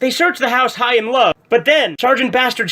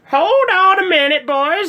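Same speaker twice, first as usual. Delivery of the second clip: put-on old lady voice, higher; 7 semitones higher than usual. Voicing an old lady coming to the door for trick-or-treaters: put-on old lady voice. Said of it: "I'm an old lady".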